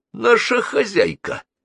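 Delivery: sarcastic, sardonic, very high tone. A character answers who the madame is, sarcastic and smiling. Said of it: "саркастически улыбнулся Буги".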